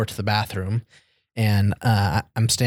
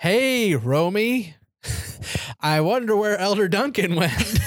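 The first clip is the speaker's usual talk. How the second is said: acted, very high, loud, carrying, deliberate, drawn-out call; 10 semitones higher than usual. Retelling another elder calling out from the next room: retelling loud speech. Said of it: "saying very loudly".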